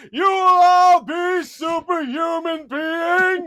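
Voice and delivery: very loud, big, booming scream. Describing a man with a guitar shouting out, retelling a booming scream. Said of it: "this booming voice, just screaming out".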